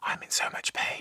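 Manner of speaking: whisper. Recounting what a man once confided to them, speaker retells it as a whisper. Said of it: "would whisper to me".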